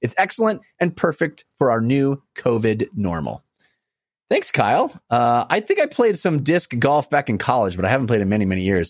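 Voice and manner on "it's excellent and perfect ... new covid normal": normal talking voice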